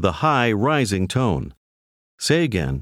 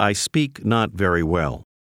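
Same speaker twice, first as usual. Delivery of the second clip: normal talking voice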